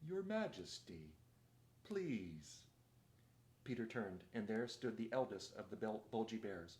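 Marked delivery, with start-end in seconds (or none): 0.1-2.6 drowsy, thick, sleepy, heavy-tongued voice. A bear suddenly interrupts the High King, in a thick, sleepy voice. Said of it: "a thick, sleepy voice said".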